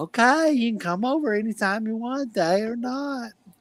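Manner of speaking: high, put-on old man character voice. Retelling a story, the speaker acts out what the old guy said, in an old guy voice. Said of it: "I love doing that voice of the old guy".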